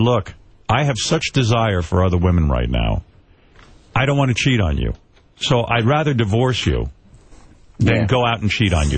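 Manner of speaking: normal talking voice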